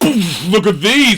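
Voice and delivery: put-on proud, boastful, showing-off bragging tone. Teasing the listener about his shoes, the speaker is imitating someone boasting. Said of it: "And you're just like".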